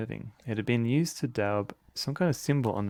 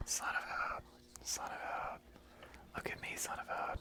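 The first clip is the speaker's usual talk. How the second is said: breathy whispering, very quiet, slow, barely audible. Imitating the whispering heard at the start of the stream: imitating a whisper. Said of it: "just whispering".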